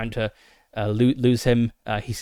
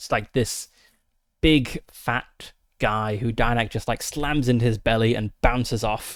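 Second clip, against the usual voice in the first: ordinary talk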